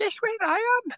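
squeaky imitated voice. Retelling a stranger passing on a chairlift: imitating a squeaky voice. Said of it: "I heard this squeaky voice going".

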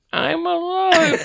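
put-on squeaky little baby voice, very high. Telling a story about a prank caller, quoting him imitating baby talk. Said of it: "baby talk".

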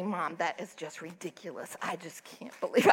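whispering under breath. Mother retells what her daughter whispered to her, whispering under her breath. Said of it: "she was whispering under her breath to me".

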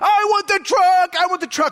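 put-on high, whiny kid tantrum yelling. Speaker recalls carrying a kid through Target as he yells: imitating a kid yelling. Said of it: "what he's yelling changes".

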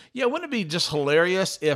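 ordinary talk, nothing marked

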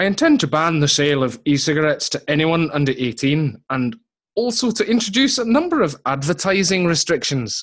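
put-on Irish accent drifting toward Scottish. Reading out a quote from the Health Minister, in a put-on Irish accent going Scottish. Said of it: "you have to do them in the Irish accent".

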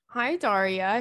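put-on British accent. Giving a shout out to a listener's friend, in a british accent. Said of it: "She said with a British accent".

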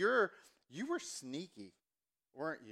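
put-on slow Southern accent with swooping pitch. Recalling mom visiting the house, the speaker quotes her: imitating mom's accent. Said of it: "every time I do my mom's accent".

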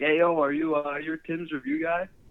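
high, loud called-out yell. Retelling a stranger calling out on the street: imitating someone yelling. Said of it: "yelled out".

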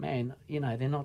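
very soft, quiet, fast undertone. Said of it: "and Jim goes".

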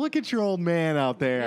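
ordinary delivery

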